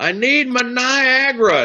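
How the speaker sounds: put-on very high, shrill, stretched-out old man's scream. Retelling a man who can't hear shouting at the pharmacist, imitating him screaming. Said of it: "he's screaming at the pharmacist".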